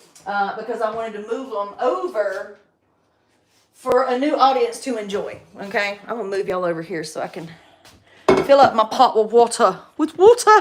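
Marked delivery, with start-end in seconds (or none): 10.0-10.6 bad fake English accent, higher and louder. Repeating a phrase while filling a pot with water: bad english accent. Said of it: "I have a really bad English accent".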